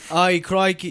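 poor attempt at a put-on English accent. Speaker greets the show's international listeners, trying a bad English accent. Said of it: "I literally can't think of an English accent".

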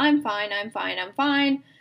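mock cheerful, fine-acting front. Retelling a front put on for a therapist: imitating a put-on fine act. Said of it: "I put on this act of".

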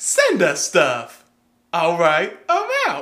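booming, slow, swooping voice. Retelling what a guy said on an audio clip: Samuel L. Jackson voice. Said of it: "the guy in the Samuel L. Jackson voice would be like".

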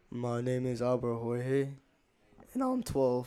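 suddenly deep voice. Introducing yourself by name and age on the podcast, in a suddenly deeper voice. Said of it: "Albert Jorge's voice just got deeper".

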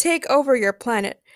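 ordinary delivery

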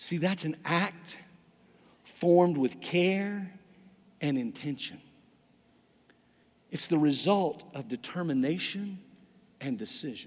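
very slow, deliberate dictation pace. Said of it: "I'm gonna read it really slowly".

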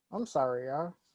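insincere, fake-sorry tone.

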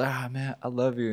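weeping, tearful voice through the words. Retelling a video of a kid meeting a star: imitating a crying kid. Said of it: "the kid's, like, crying".

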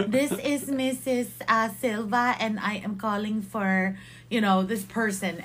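put-on Filipino accent. Retelling a prank call to the school, posing as Mrs. Silva, Filipino accent. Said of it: "three different Filipino accents".

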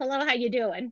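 put-on Southern accent. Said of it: "I only practice".

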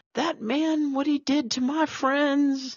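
acted-out very high, drunk-sounding voice. Recounting a scene where a woman pops into the cafe, imitating her sounding drunk. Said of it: "she sounds like she's intoxicated".

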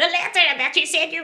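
high-pitched shouting. Answering Oriel's shouted question from a distance, shouting back. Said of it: "And then he shouts back".

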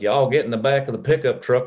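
backwoods rural country-folk accent. Contrasting how city and country people talk, rural country accent. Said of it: "if you are from out in the country, you'd be like".

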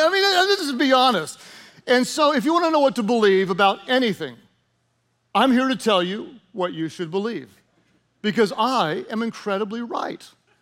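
tongue-in-cheek, lightly sarcastic, know-it-all bragging delivery. Joking that the audience should believe everything said, sarcastic tone. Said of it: "I'm being a little sarcastic".

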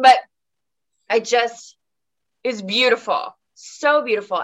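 choked-up voice catching with feeling. Telling another speaker how beautiful watching their work was: getting emotional. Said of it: "I get so emotional".

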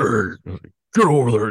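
loud scolding tone. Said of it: "you're scolding your dog".

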